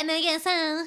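high, sneering, mocking taunting voice. Retelling how Danny repeated Christmas's words: imitating Danny mocking. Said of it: "She repeated it back in a voice mocking Christmas".

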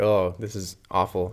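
normal talking voice

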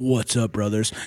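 voice dropped way down, deep powerlifter style. Describing hearing Julius Maddox greet them: deep-voiced Julius Maddox impression. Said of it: "we just hear this deep ass like".

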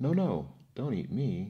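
high, loud storybook goat voice crying out. Narrating the second billy goat answering the troll on the bridge, crying out. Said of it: "cried the second billy goat".

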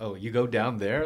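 ordinary talk

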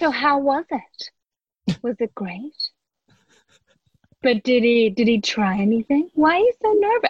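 fully committed, put-on young woman voice. Retelling how dad read a scene fully in character: imitating dad playing a young woman. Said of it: "Dad takes it and fully gets into character".

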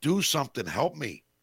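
put-on frustrated voice. Retelling how a coach sounded, imitating Tortorella's frustration. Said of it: "you could definitely hear the frustration in his voice".

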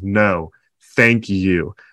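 mock tearful, choked up, voice catching. Retelling an actor's tearful thanks on stage: imitating Harrison Ford choked up. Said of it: "is getting choked up and is in tears and says".

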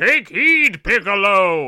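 grand epic narrator voice. The speaker mocks how a character in the show talks, Kami's epic narrator voice. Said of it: "talks like he's like doing the narration for Lord of the Rings".

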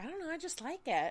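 acted, cheery, bubbly, high-pitched voice. Retelling how the other speaker answered a relative: imitating a bubbly reply. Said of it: "You were just so bubbly".

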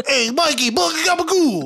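put-on thick Italian accent. Podcaster imitating Boner, who commutes from Long Island: Boner's thick accent impression. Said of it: "he has a thick fucking accent".

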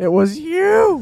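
very high, very loud screech, "you" dragged out. Quoting a line from the Simpsons movie: imitating a Simpsons movie line. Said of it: "that one line in the Simpsons movie where she's like".

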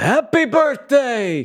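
mock, very high, sudden, swooping yell. Retelling yelling at a cartoon mouse on TV: retelling a yell. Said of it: "And I just yelled".

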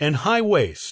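plain

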